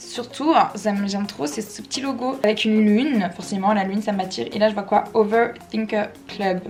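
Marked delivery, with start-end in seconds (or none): 5.1-6.6 slow, careful English in French accent. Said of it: "Désolée pour mon accent".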